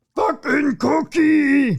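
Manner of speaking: very high, high-pitched puppet monster voice. Reporting a man dressed as the character yelling at locals: Cookie Monster voice. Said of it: "Best Cookie Monster I could do".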